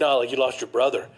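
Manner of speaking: imitated drunken voice. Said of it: "he was very drunk".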